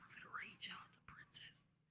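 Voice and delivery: very soft, barely voiced whisper. Speaker tells viewers where they are going next, whispering it. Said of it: "I gotta whisper it".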